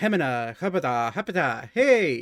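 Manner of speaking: odd, very weird, strange gibberish-speaking voice. Speaker acts out a presence speaking into your head, in a very weird voice. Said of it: "you hear a very weird voice speak into your head".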